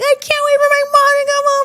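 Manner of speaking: shrill, very high, acted-out child's tantrum scream. Retelling a childhood tantrum at the dad, imitating a child screaming. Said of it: "screaming at him".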